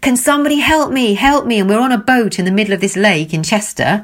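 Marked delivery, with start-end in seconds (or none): 0.0-1.6 mock, high-pitched shout. Retelling how a man on a boat had to shout out: retelling a shout for help. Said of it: "he has to shout out".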